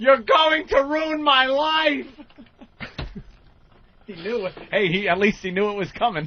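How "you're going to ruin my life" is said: high, slow mock scream. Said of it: "screams out".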